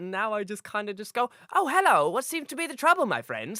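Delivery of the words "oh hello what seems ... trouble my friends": funny, high, swooping cartoon character voice. Showing the funny voice he uses now: his own funny cartoony voice. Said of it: "It's just basically a funny voice that I use".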